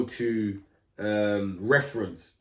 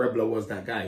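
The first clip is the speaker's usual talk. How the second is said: ordinary delivery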